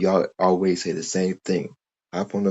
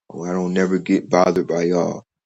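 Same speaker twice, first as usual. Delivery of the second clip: ordinary delivery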